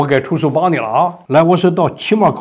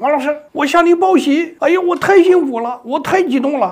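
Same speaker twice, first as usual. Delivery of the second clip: acted very high, thrilled and touched girl's voice; 14 semitones higher than usual. Teacher retells a girl's phone call to them: imitating a girl's excited voice. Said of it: "那个女孩那种激动哈、啊、感动人的声音".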